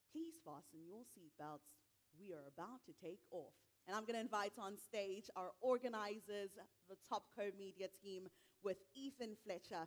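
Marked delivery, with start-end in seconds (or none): 0.1-3.5 smooth airport public-address announcer voice. Welcoming a conference audience, then doing an airport announcer voice. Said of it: "Let me use my airport voice".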